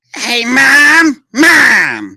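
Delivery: put-on little-kid voice, very high, very loud, stretched-out word. Showing the voice the speaker does for a kid, Cartman kid voice. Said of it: "This is the voice I do".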